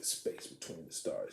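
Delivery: put-on cranky, grumpy old man voice. Retelling a comic book scene, imitating Kang as a grumpy old man. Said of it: "He's just like this grumpy old man".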